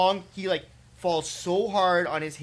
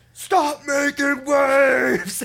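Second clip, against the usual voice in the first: loud, high scream with "waves" stretched out; 8 semitones higher, 8 dB louder than usual. Retelling a confrontation on a lake, the speaker imitates a man screaming. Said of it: "He's like screaming".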